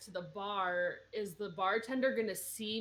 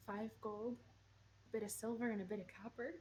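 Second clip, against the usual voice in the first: very quiet, hushed half-whisper; 10 dB quieter than usual. Asked a question in character, a player half-whispers back the answer, half-whispering. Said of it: "I'll whisper back".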